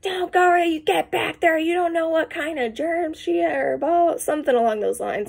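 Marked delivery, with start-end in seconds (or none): 0.0-4.2 high-pitched, loud yell. Retelling how a wife called her husband back: imitating a wife yelling. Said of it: "his wife yells".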